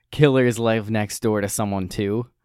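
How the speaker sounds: ordinary delivery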